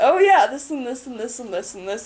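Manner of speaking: ordinary delivery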